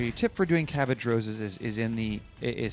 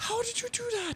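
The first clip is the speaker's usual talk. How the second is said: soft, very high, thrilled, excited falsetto; 5 dB quieter than usual. Acting out the group's reaction to a painting technique, mock-excited falsetto. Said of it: "we do it in the falsetto, excited voice".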